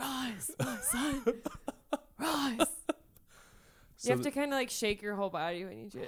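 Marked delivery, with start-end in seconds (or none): 0.0-2.7 extremely creepy, very slow, drawn-out drawl. Repeating a line another speaker quoted: mock-creepy Augustus voice. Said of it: "You're really good at saying that extremely creepily".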